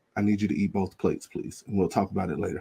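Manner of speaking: whisper. Retelling what she whispered in the speaker's ear, as a whisper. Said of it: "She whispers in my ear and just is like".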